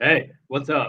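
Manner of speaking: put-on deep, big frat boy bro voice. Demonstrating the voice he used to put on, frat boy voice. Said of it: "my frat boy don't get beat up for being a sissy voice".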